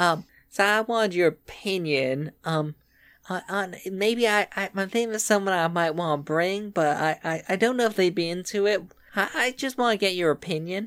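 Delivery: hesitant, put-on Georgia Southern accent. Asking the other speaker's opinion about bringing someone, in a good Georgian accent. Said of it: "my good Georgian accent".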